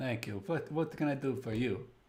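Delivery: put-on, mob-style Eastern European mafia accent. A player voices a character who has just been handed ale, in a mafia or eastern european accent. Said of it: "go between mafia and Eastern European accents".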